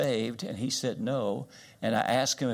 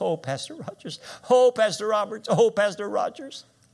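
mock sobbing, very high and loud; 10 semitones higher, 6 dB louder than usual. Speaker retells a lady calling her pastor, imitating a woman sobbing. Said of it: "And she's sobbing".

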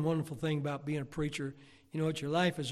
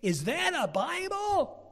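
very high, loud, very slow, drawn-out calling out; 13 semitones higher, 5 dB louder than usual. Retelling a girl asking in front of the class: imitating a loud question. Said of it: "real loud in front of everybody in the class".

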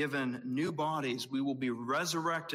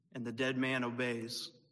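ordinary talk

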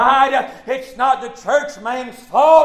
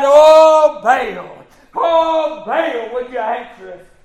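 mock slow cry with long drawn-out oh; 4 dB louder than usual. Retelling the prophets of Baal calling on their god: imitating people crying out to Baal. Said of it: "they cried".

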